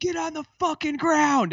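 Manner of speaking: very high screaming voice.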